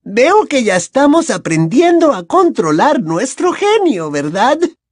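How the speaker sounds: very high, honeyed, sugary-sweet tone. Professor Umbridge addresses a student who has just sat down, sweetly. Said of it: "continuó la profesora Umbridge con dulzura".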